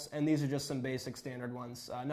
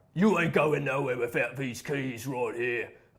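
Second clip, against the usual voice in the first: very loud, rough rural Cockney accent; 9 dB louder than usual. Playing a medieval jailer guarding a castle's keys: medieval jailer voice. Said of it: "you might run into a medieval jailer".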